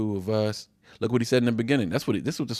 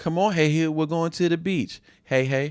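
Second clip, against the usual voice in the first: higher-pitched mock baby talk; 6 semitones higher than usual. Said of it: "he's starting with the baby talk".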